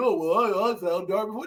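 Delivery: snide, mocking, sarcastic voice. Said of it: "don't try to tell me that you're like".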